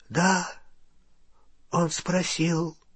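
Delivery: soft, hushed half-whisper, barely audible. Narrator voices Ollivander answering Harry, half-whispered. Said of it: "прошептал Олливандер".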